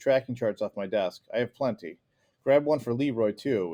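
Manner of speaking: ordinary delivery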